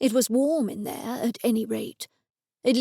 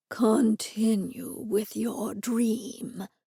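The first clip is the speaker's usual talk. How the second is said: slow, flat, drawn-out, level monotone. Edison speaks to Alfred while setting his glasses back on the desk: slow monotone. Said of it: "said slowly and in a monotone".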